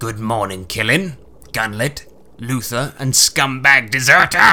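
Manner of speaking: curt bark through gritted teeth, jaw clenched. A commander greets the heroes and a deserter, Blackthorn barking through gritted teeth. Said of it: "Blackthorn barks through gritted teeth".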